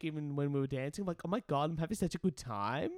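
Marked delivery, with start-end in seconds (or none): 1.2-2.9 phrase lifted, rising pitch at the end. Acting out past self whispering while dancing: upspeak, rising at sentence ends. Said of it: "talking to her in upspeak".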